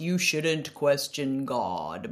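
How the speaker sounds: very pious, preachy tone, low and slow. Mimicking what people say to her, in a very religious voice. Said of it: "in a very religious voice".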